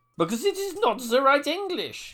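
put-on full-on German accent, very high-pitched. Play someone answering the Führer about the leaflets dropped in London, in a full German accent. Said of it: "I want full accent action".

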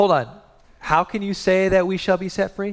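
put-on offended, indignant tone. Acting out the crowd questioning Jesus: acting out an offended challenging tone. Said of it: "They're coming to Jesus with that tone".

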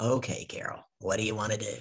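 mock-exasperated, weary sighing. Retelling how a man sighed on hearing sales coaching was refused, imitating an exasperated sigh. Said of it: "so he sighs and he goes".

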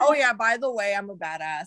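imitated nonchalant, casual tone. Teasing the other speaker by imitating their telling: imitating someone nonchalant. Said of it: "just saying this so nonchalantly".

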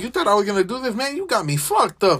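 mock obnoxious, rude, jerky taunting tone. Imitating people who brag about being wronged: imitating an asshole. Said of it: "that's what it sounded like".

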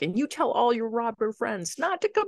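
play-acted, high-pitched, swooping scream. Retelling chasing would-be robbers away: imitating her own yelling. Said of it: "So then I start ye-, yelling and chasing them".

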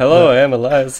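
put-on detached, offhand voice. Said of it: "так отстранённо, так, типа, просто здоровается".

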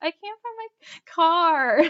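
high, slow, helpless crying, acted out. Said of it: "And I'm just crying".

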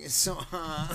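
little griping, whiny, complaining voice. Quoting Matt complaining about the heat: Matt's whiny voice. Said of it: "I love how that's everyone's just whiny voice".

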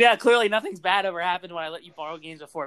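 ordinary talk, nothing marked

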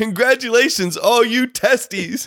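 mock wild, high, blurted-out scream. Retelling what was shouted in front of a class: retelling own scream. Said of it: "I just screamed".

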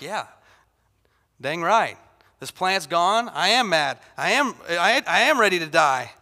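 slow, deliberate, dragged-out delivery. Retelling the Jonah story, voicing Jonah after the plant dies: imitating Jonah. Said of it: "He's like".

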